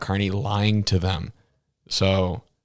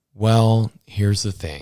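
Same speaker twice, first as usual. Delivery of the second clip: very calm, almost paternal tone; 4 dB louder than usual. Describing how a man answered Ben's questions, imitating his calm, fatherly voice. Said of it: "he put on like that kind of like very like calm, almost like fatherly voice".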